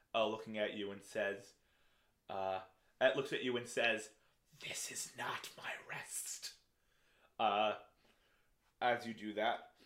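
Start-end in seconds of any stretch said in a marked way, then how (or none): 4.6-6.5 hushed, very quiet whispered creature voice. Voicing a struck creature that looks at the caster: whispering creature. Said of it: "this creature gives a whisper".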